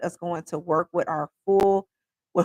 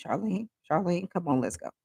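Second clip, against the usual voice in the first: soft, gentle, hushed murmur; 5 dB quieter than usual. Retelling a mother calling the speaker away: imitating mother speaking softly. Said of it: "her softly saying my name".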